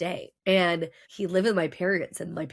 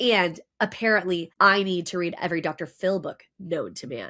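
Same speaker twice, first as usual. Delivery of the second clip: normal talking voice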